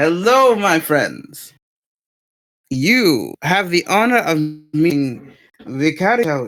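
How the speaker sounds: animated character voice with swooping pitch. Playing Hikari approaching the other characters: voicing Hikari in character. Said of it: "And then Hikari".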